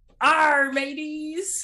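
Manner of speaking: put-on stock storybook pirate voice. Showing off a pirate costume to the podcast, pirate voice. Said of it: "I am a pirate".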